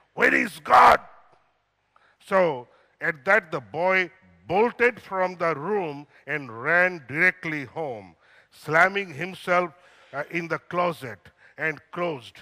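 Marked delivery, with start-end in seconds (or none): 0.2-1.0 very loud, high, raised, demanding shout. Telling a story, the speaker acts out a pastor questioning a boy, retelling a raised voice. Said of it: "raised his voice even more".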